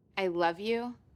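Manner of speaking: dismissive, brushing-off tone. Repeating the line back in an acting exercise: dismissive, like get out of here. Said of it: "She's saying it like, "Get the hell out of here."".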